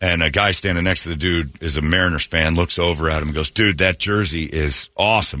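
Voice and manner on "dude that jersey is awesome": ordinary talk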